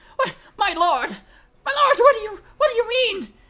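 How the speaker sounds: cowering creature yelping, shrill, terrified, very high, very loud. Voicing the kobolds answering their lord, with meek terrified yelps. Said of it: "Much meeker comes the terrified yelps".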